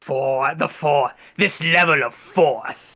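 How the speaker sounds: slow, drawn-out, sinister voice.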